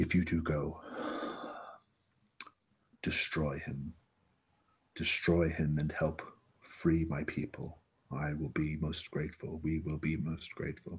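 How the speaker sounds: slow, hushed, very quiet, guarded voice. Narrating a game, voicing a man who pulls the listener close, speaking really quietly. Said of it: "he speaks really quietly".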